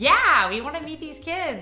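put-on excitement. Retelling hearing the news about the babies, the speaker acts out their answer, retelling an excited reply. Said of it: "we were so excited".

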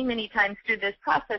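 ordinary talk, nothing marked

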